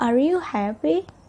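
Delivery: happy said with upward intonation. Teaching intonation for asking questions, rise on happy. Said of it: "you can use rising intonations in the end of the sentence".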